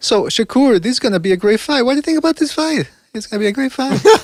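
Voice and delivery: high voice jumping an octave at each ending. Imitating how a man questions Shakur, voice jumping up an octave at sentence ends. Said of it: "the voice goes l- up an octave every time he he finishes his sentence".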